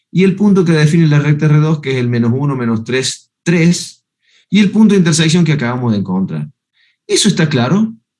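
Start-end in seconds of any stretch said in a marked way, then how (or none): 4.5-6.5 fast, rattled-off delivery. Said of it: "Lo dije rápido".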